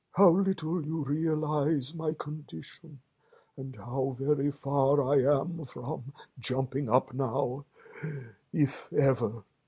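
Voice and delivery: feeble, faint, weak, high murmur. Lying still, a friend answers his companion's urging to jump up: weak murmur. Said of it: "He certainly lay very still and flat, and his voice was weaker, and his manner much changed. / murmured [name], / and his voice was weaker, / and his voice was weaker".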